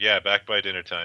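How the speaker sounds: mock-sarcastic, put-on sarcastic delivery. Describing how their character would answer, acting out a sarcastic line. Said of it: "Oh yeah, sarcastically".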